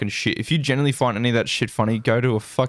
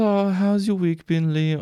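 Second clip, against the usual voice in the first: lightly put-on, high, raised woman's voice; 9 semitones higher than usual. Retelling what a woman he knows asks each week, imitating her voice. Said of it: "I can't do her voice".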